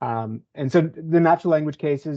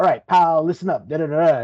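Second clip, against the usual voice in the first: put-on 1940s gangster accent; 3 semitones higher, 4 dB louder than usual. Quoting a chatbot's bubble sort analysis, in a 1940s gangster voice. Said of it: "in this nineteen forties gangster voice".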